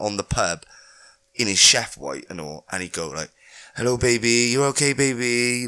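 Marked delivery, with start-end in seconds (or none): 3.8-5.7 mock fawning, sweet-talking voice. Retelling how a coworker answered the phone to her: imitating someone sweet-talking. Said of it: "he'd have to butter her up".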